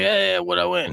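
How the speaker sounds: put-on elderly gentleman voice. Retelling a radio call from an older caller: imitating Michael, an older gentleman. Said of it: "You could tell he's an older gentleman".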